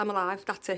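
normal talking voice

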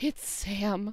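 put-on dramatic sigh. Recapping a scene where a character slides to the floor: retelling a big gusty sigh. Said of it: "as he releases a big gusty sigh".

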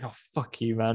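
angry outburst. Retelling how an actor cursed out a director at an audition: imitating an angry outburst. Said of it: "really pissed off".

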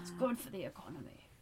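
slow, deliberate, stateswoman-like formal pronouncement. Joking about the monarchy, doing a Margaret Thatcher impression. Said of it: "my great Margaret Thatcher impression".

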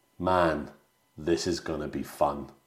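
mock-flat, expressionless delivery. Speaker recounting a scene's dialogue, retelling Rick's line deadpan. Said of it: "But really deadpan".

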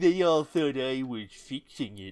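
smug, drooping cartoon-dog voice. Imitating Brother Watchtower: Brother Watchtower as smug droopy dog. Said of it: "a smug, droopy dog in my mind".

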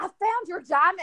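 put-on excited voice. Retelling what he said about finding a diamond: imitating excited speech. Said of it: "He was very excited".

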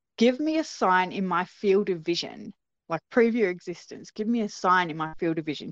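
normal talking voice

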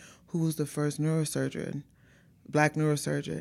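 ordinary delivery

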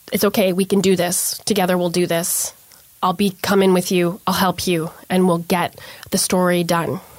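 ordinary talk

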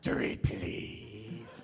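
eerie, otherworldly, low, possessed witch voice. Retelling how she suddenly speaks to another woman, in a possessed Dune witch voice. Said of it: "possessed by this voice".

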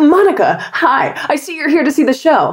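acted very high, swooping, over-eager camp counselor cheer. Retelling how a guy bounded up to a woman in line: imitating camp counselor energy. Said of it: "he had too much camp counselor energy".

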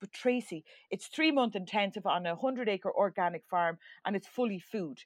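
ordinary delivery

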